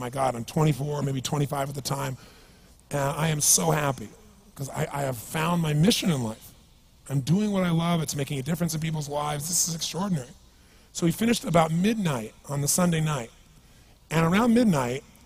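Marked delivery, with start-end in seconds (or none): none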